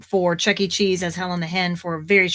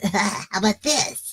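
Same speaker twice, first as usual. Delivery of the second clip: put-on raspy young boy voice; 2 semitones higher than usual. Retelling an audition where judges asked for more rasp: raspy young boy voice. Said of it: "they asked me to be a little more raspy with the voice".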